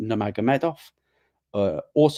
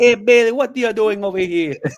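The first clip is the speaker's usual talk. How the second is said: put-on Jamaican accent, much higher, louder; 9 semitones higher, 6 dB louder than usual. Joking about dubbing football interviews in Patwa, quoting in a put-on Jamaican accent.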